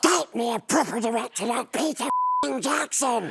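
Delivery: high, slow, drawn-out little creature voice. Retelling what Gollum turned around and said to the speaker, in a Gollum voice. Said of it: "Gollum turns around to me and says".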